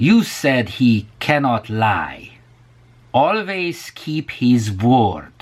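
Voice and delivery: slow, drawn-out Hungarian accent.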